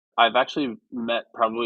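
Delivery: normal talking voice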